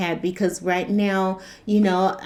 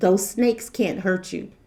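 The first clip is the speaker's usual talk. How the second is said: acted, utterly calm, soothing, unbothered voice. Recounting a scare over a lot of snakes, imitating mother's very calm voice. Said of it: "in the most calm voice".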